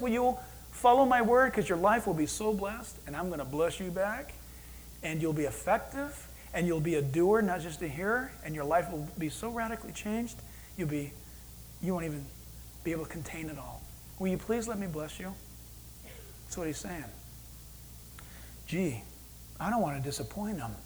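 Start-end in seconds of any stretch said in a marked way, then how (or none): none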